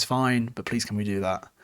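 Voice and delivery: ordinary talk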